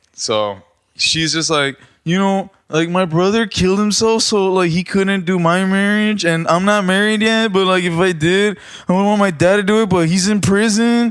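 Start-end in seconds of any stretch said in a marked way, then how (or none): 2.1-11.1 high, tearful woman's voice, near sobbing.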